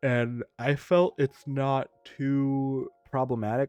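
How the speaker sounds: yawning while talking. Commenting on a game balance change, yawning while talking. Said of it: "Sorry for yawning".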